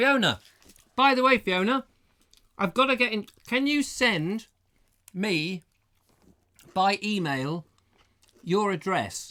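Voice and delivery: loud high shouting. Calling out to Fiona to ask for her email address, shouting. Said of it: "I don't know why I'm shouting".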